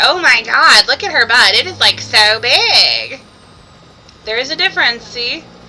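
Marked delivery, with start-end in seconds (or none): 0.0-3.2 put-on loud California valley girl drawl, big and stretched. Mocking how California girls talk, in a mock valley girl voice. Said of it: "not with their".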